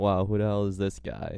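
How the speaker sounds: ordinary talk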